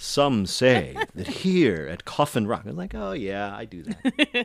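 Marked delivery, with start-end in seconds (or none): 0.0-2.6 swooping, documentary-style narrator voice. Recalling a scene being shot, re-creating its narration: Heather's narrator voice. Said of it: "I loved Heather's narrator voice".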